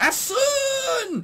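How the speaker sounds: mock very high, long, drawn-out hollering shout. Retelling a game character walking into a room: imitating someone shouting. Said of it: "walking into a room shouting".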